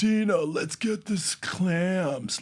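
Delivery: very high, very slow crazy voice, clams stretched out. Imitating a friend's puppet character talking: crazy Doreen puppet voice. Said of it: "she has this really crazy voice".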